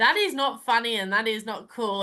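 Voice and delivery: ordinary talk, nothing marked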